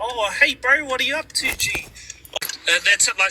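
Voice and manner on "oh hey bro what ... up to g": put-on high, slow, unhurried, drawling Kiwi accent. Showing how Korg sounds, the tone people talk back home: imitating Korg's Kiwi tone. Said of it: "he's putting on like".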